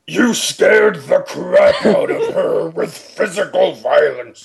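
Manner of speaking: mock high, laughing ogre voice. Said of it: "Okay, Cookie Monster".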